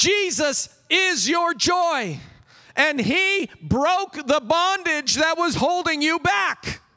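all-out yelling. A speaker addressing listeners, openly admitting it, yelling. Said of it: "All capitals right now".

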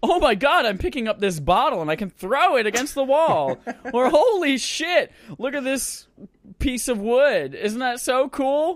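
very high, loud animated-cartoon voice. Acting out VR novelty reactions, in a Rick and Morty cartoon voice. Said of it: "I sound like I'm from a Rick and Morty cartoon".

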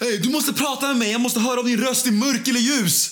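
acted-out very high, loud, frantic, panicked shriek. Retelling running into a shop and screaming at the cashier, imitating the scream. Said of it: "skriker jag till tjejen i kassan så här".

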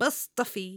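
put-on cartoonish little child voice. Reviewing an art entry and repeating its title: little cartoon kid voice. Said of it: "I need to do that like a little cartoon kid".

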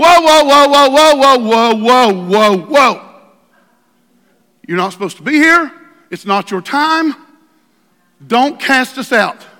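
put-on demon voices, loud and screaming. Retelling how demons reacted when Jesus stepped into their midst: imitating screaming demons. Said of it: "they started screaming at him".

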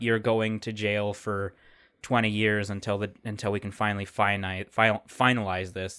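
ordinary talk

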